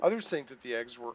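ordinary delivery, nothing marked

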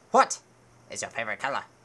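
put-on very loud, booming, deep, stern old man voice. Keeper of the Bridge of Death questioning a knight, deepened old bridgekeeper voice. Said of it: "Look, there's the old man from scene 24. ... He is the keeper of the Bridge of Death. ... I will be using a pitch changer to just artificially deepen my voice while I do random stuff".

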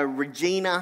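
usual speaking voice

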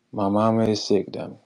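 ordinary delivery

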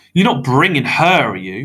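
loud grumbling. The narrator asks Mr. Krebsley if he is bringing Madame Octa, grumbling. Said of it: "I grumbled".

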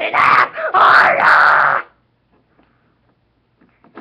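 very loud, slow, drawn-out, swooping, wailing scream. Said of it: "I might even scream just like now".

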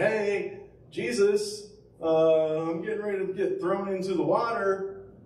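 put-on play-acted high, slow, panicky shrieking like a girl. Picturing Peter calling to Jesus in the sinking boat, imitating Peter screaming like a girl. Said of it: "just screaming like a girl".

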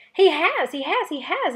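loud, shrill, squeaky little squirrel voice. Narrating a story, a young squirrel loses its head, in a squeaky young squirrel voice. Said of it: "it squeaked".

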